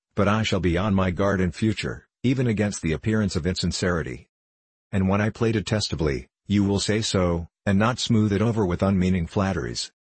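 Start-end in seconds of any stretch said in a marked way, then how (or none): none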